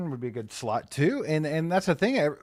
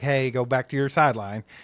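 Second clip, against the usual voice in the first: ordinary delivery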